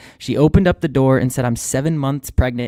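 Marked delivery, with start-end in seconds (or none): 1.4-2.7 put-on thick English accent, authoritative and confident. Retelling what a parked neighbor said: imitating a confident English accent. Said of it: "in a very confident and authoritative, thick English accent".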